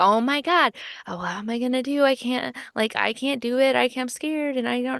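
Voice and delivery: put-on frantic, frightened, high, anxious panic. Retelling how an anxious woman reacts when told to deal with him, mimicking an anxious panic. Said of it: "She has anxiety".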